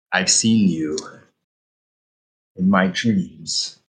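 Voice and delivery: half-whispered, almost a whisper. Narrating the game, voice what all four players hear in their heads, almost whispering. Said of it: "sort of almost whispering".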